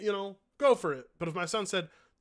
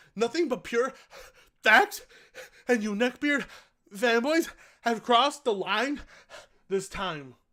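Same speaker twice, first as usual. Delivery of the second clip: put-on gasping speech, higher and louder; 5 semitones higher, 5 dB louder than usual. Reading a comment aloud in imitation of its writer: imitating him, gasping for air. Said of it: "let me read it like him".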